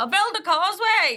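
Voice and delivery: pretend shouting. Joking that neighbours across the water shout at each other: pretend shouting across the sea. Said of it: "shouting over to each other".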